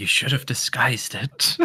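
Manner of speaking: hushed whisper. During a tabletop roleplaying game, saying a character's line, whispering. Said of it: "I'm going to whisper".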